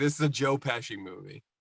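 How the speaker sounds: usual speaking voice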